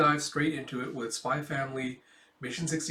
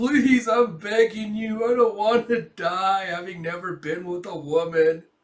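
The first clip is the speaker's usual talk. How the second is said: play-acted loud, high, pitiful sobbing scream; 6 semitones higher, 9 dB louder than usual. Retelling a deserter's plea at gunpoint: imitating pathetic scream-crying. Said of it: "There's just pathetic scream cries".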